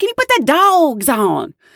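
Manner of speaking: put-on high-pitched Southern accent. Acting out a flight attendant repeating her request to a bartender, as part of a story; imitating a Southern accent. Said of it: "a Southern flight attendant".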